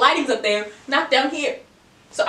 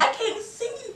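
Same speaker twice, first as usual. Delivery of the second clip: put-on elderly woman's voice, very high and soft; 10 semitones higher, 7 dB quieter than usual. Act out someone who says she can't see and is told to turn the brightness up, in an old lady voice. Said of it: "With the old lady voice too".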